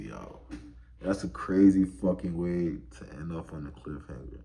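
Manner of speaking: ordinary delivery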